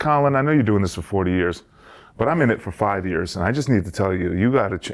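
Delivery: normal talking voice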